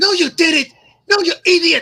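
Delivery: screechy, very high, very loud yelling. Speaker voicing Ren arguing like kids, in a Ren impression. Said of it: "That's actually a really good impression of Ren".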